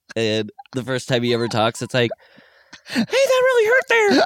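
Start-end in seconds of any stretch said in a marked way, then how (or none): 2.9-4.3 squeaky, very high-pitched, loud voice. Joking that a villain finally speaks after a kick: high-pitched Michael Myers voice. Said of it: "that's why his voice is still high".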